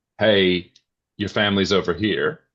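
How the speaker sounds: mock snarky delivery. Retelling own remark to a wife on her phone: imitating own snarky remark. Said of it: "I said something really snarky like".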